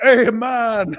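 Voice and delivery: put-on loud, slipped-in Jamaican accent. Retelling a Friends scene where every accent comes out Jamaican: Joey's accidental Jamaican accent. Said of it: "everything comes out Jamaican".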